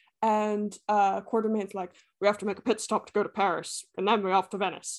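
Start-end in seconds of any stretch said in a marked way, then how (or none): 2.2-5.0 put-on Scottish accent with stiff, unmoving jaw. Retelling a film scene in the voice of Sean Connery as Quartermain. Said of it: "it's Sean Connery".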